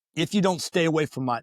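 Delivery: normal talking voice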